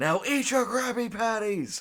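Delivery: very high, explosive, furious shouting outburst. Retelling a cartoon scene, imitating explosive rage. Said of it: "his classic, like, explosive rage".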